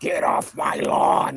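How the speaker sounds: put-on slow, drawn-out, crotchety old man voice. Retelling a movie line: Clint Eastwood impression. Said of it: "but he goes, ... like that".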